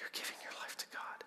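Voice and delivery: put-on old man's hushed whisper under the breath. Retelling what a stranger whispered after hearing about church work: imitating an old man's whisper. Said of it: "And then he said it again".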